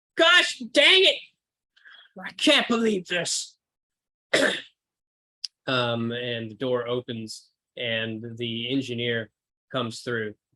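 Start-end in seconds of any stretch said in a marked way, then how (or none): 0.2-3.6 shouting pitched very high. Storyteller voicing a person behind the door at the front of the car, shouting. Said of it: "You hear from the door at the front of the car some shouting".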